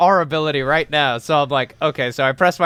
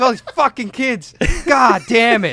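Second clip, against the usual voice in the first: put-on screaming rant, higher pitched; 7 semitones higher than usual. Retelling a rant about the Force: imitating someone screaming. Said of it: "he just starts screaming about it".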